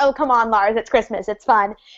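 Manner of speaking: normal talking voice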